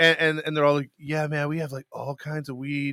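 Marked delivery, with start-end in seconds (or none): 1.0-2.9 put-on surfer dude voice, quieter. Retelling what the guys at a bar said, in a surfer dude voice. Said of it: "Why are you talking like a surfer".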